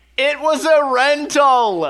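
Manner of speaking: high, raw, anguished yelling cry. Tabletop player's character sees a wooden cart explode, anguished yell. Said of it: "I just yell, like, in anguish".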